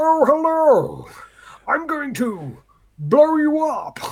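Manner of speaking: over-the-top proper English, high, slow, sing-song. Describing a parody done with Tom Hardy's voice: over-the-top Tom Hardy voice. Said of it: "over-the-top voice".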